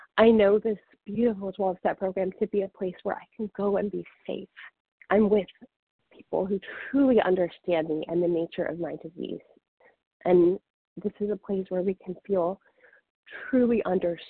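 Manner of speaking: emotional, heartfelt voice welling up with feeling. Sharing gratitude for a 12-step program with others, getting emotional. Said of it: "I'm getting emotional as I share this".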